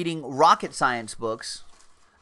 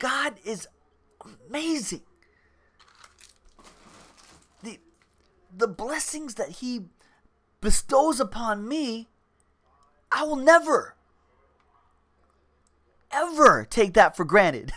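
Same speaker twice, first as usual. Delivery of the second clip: slow, deliberate, intense, pitched-up motivational-speaker cadence; 8 semitones higher than usual. Showing others how a man talks, like a motivational speaker, imitating a slow, intense speaker. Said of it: "kind of does talk slow for like a motivational speaker, but it's intense".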